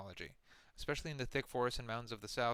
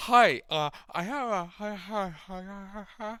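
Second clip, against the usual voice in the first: very loud, slow, drawn-out, exaggerated creepy voice; 9 semitones higher, 11 dB louder than usual. Describing a woman who comes in, imitating how she talks. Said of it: "she talks like this".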